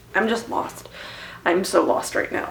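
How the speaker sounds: soft, unvoiced despairing murmur, barely above a breath.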